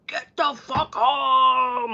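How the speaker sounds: very slow demonic scream, "home" dragged out. Speaker imitating a woman screaming at his brother over the phone: imitating someone screaming. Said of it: "her voice over the phone screaming at my brother".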